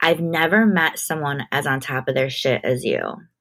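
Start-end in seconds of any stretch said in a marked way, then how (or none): none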